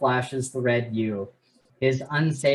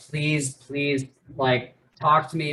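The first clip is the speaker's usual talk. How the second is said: mock desperate crying plea. Retelling a book scene where a character begs while crying: imitating a crying plea. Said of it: "begging the Thunderhead".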